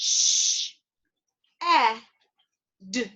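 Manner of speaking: shed split into sh, e, d, sounded out slowly. Speaker demonstrating phonics on the word shed, sounding out a word slowly. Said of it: "Let's sound out that word one more time".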